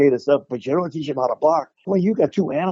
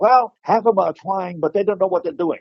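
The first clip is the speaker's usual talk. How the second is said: pitched-up speech with a speech impediment; 5 semitones higher than usual. Retelling what Bruce said about martial arts, imitating Bruce's speech impediment. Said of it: "I've got my little imitation of Bruce".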